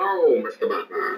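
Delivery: put-on villain voice. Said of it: "So if I do the Bane accent".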